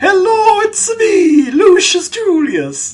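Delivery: very high, swooping, cartoonish exaggerated Italian accent. Player imagines how the game's Romans could sound, in a Super Mario voice. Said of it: "maybe sounding like Super Mario".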